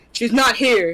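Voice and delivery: rough, gruff tone. Voicing a gruff voice answering a phone call: gruff voice. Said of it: "here's a gruff voice on the end".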